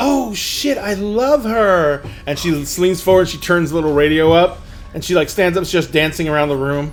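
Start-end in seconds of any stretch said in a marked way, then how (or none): 0.0-2.0 thrilled outburst, high-pitched and very slow, drawn out. Narrating a scene, voicing an excited young lady: excited young lady voice. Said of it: "the young lady goes".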